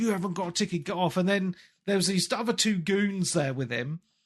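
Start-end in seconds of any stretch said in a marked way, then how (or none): 0.0-1.2 play-acted angry, irate, scolding tone. Retelling how a train conductor kept shouting at him, imitating an angry shout. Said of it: "he got angry and he kept on shouting at me".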